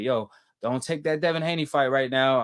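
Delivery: ordinary delivery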